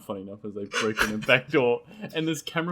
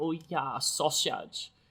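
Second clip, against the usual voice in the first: gentle German accent; 7 dB quieter than usual.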